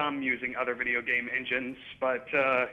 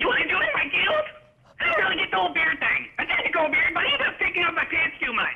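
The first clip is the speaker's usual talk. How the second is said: squeaky, very high, loud gnome voice; 5 dB louder than usual. Asked if he voices characters in his movies, demonstrating a little gnome character voice. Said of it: "That little gnome".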